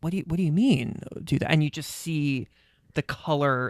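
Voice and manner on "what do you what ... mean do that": put-on creepy voice, quieter. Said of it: "going closer to the camera and going".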